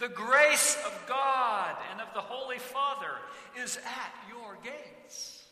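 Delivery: very loud, very high, regal herald proclamation voice. Describing a herald announcing Tetzel's arrival in a town, loud regal herald cry. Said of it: "in a very loud, regal voice".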